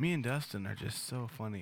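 ordinary delivery

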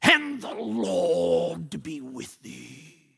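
very low, deep, guttural king voice. Acting out a king's blessing, in a Darth Vader voice. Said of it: "the king's got the low, deep, guttural Darth Vader voice".

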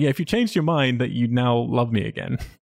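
play-acted bitter, cutting tone, soaked in bitterness. Retelling a movie scene where a couple argue: imitating a bitter retort. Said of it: "so bitterly".

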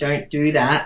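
ordinary delivery

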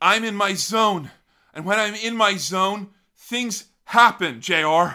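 breathy, breathless, high-pitched, loud voice. Right after praising Ken's silly voice, doing a breathy Ken impression. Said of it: "It's kind of a breathlessness to it".

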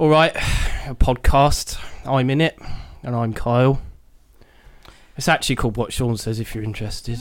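put-on, deliberately tedious, dull and boring delivery. Doing a podcast intro after being refused a roar: deliberately boring delivery. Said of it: "I've got to do a really boring one now".

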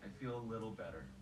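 heavy stress placed on the word little.

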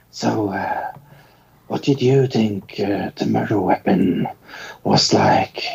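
theatrical whisper. Speaker mimics an actor who whispers every line in interviews, imitating an actor's whispered lines. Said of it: "he whispers his lines all the fucking time".

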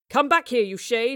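loud, high angry shout. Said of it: "Marlowe cried".

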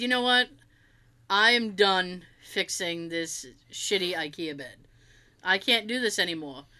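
ordinary talk

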